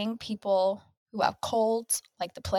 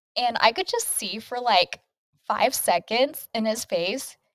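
ordinary delivery

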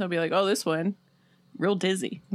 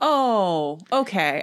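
let-down, deflated, drawn-out oh; 4 dB louder than usual. Speaker reacts to an explanation of forelimb suspension: disappointed. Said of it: "I don't know why I sound so disappointed".

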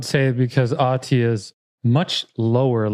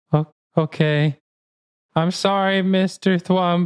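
whimpering, holding back tears, higher; 8 semitones higher than usual. Playing a child told her mother is gone, whimpering, trying not to cry. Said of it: "she starts to whimper and tries, she tries not to cry".

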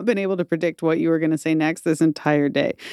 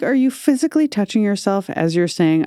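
ordinary talk, nothing marked

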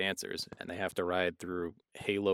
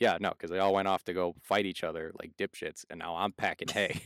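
ordinary delivery

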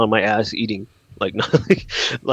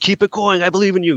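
put-on yell, much higher; 7 semitones higher than usual. Recalling rolling down the window to encourage people, imitating a yell. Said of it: "just to yell".

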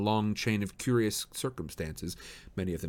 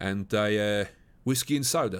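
plain

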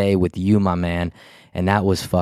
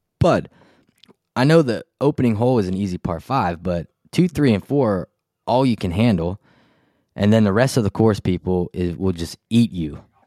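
ordinary talk

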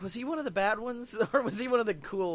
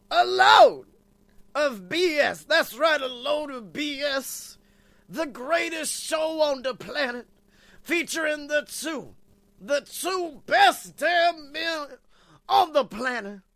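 hyped revival preacher announcer voice, higher and louder; 5 semitones higher, 7 dB louder than usual. Opening the show with a big intro: hyped preacher-style show intro. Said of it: "the man with the intros".

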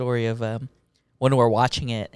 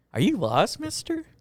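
very high, badly dubbed little-girl child voice; 11 semitones higher, 3 dB quieter than usual. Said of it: "very bad dub with your mouth".

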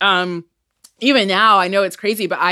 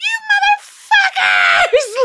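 put-on scream, higher; 3 dB louder than usual. Retelling a film scene where a dying character screams at the audience: imitating a scream. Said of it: "And she screams".

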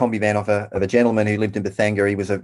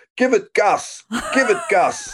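put-on German accent, high, urging and drawn out; 12 semitones higher than usual. Retelling what he yelled while the speaker pressed the accelerator, retelling a yell in German accent. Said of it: "in his German accent".

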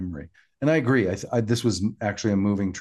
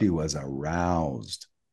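put-on voice dropped way down, deep; 5 semitones lower, 4 dB quieter than usual. Retelling a scene where a character answers the doctor about a Klingon: put-on much lower voice. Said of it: "I love how your voice went four octaves lower".

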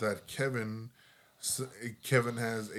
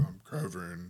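laid-on, deep, put-on manly voice; 4 semitones lower than usual. Retelling how the friend answers the phone, manly voice. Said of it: "The friend starts giving her like manly voice".

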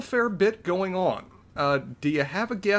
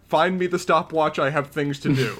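ordinary delivery

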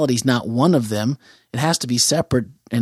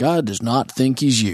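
put-on deep baritone radio voice. Imitating a radio spot speaker: imitating Steve Brown's deep baritone. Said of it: "I could hear Steve in that deep baritone voice".

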